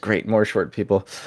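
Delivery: hushed, low mutter under the breath. Narrating a story, voicing a character's aside: muttered under his breath. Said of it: "kind of under his breath he says".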